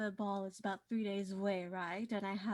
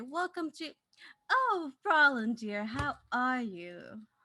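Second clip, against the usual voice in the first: flamboyant shopkeeper voice, higher and louder; 4 semitones higher, 5 dB louder than usual. Voicing a flamboyant shop owner greeting a customer: flamboyant shopkeeper voice. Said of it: "you see them turn and say".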